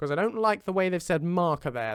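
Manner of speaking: normal talking voice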